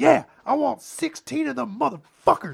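rough, high yell. Retelling a loud customer's order at a counter: imitating a customer yelling.

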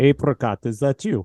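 put-on Russian-accented voice. Recapping an episode, speaker voices a character's line in a russian accent. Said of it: "a Russian-accented voice ask".

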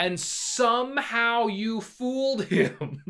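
very high, slow laughing disbelief. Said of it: "And it's like".

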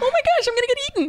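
small, frightened, very high squeaky voice. Speaker acts out facing a lioness and her cubs, imitating own scared high voice. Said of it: "my voice gets real high pitched".

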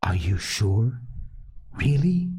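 hushed, soft, kept-down voice. In a narrated beach scene, a boy speaks to the other two: hushed. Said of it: "Piggy's voice came to them, hushed".

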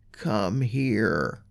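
hushed, put-on creepy voice, here drawn out. Retelling what your son said the ghosts say, in a creepy voice. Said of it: "saying in a creepy voice".

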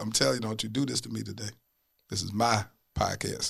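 choked-up, pleading voice, fighting back tears. Reacting to a guest's kind words, choked up, near tears. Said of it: "you over here finna make me cry".

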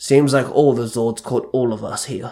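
plain reading voice

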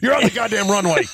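high, loud angry yelling.

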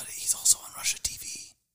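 soft, low, hushed conspiratorial whisper. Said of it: "I don't know why we're speaking so low".

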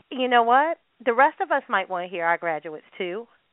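normal talking voice

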